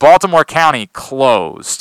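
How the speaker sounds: TV announcer bulletin-reading voice. Retelling how a TV announcer read school closures: imitating Dave Durian reading closures. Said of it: "He would read it like this".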